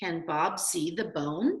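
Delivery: voice goes up on the word "bone". Reading tip on finishing sentences by their punctuation, a question: voice rising on bone. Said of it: "did you hear how my voice went up?".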